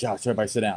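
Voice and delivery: quiet, hushed stage whisper under the breath. Retelling half-whispering a reminder to him during a wedding: retelling a half-whisper. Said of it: "I was whispering to him".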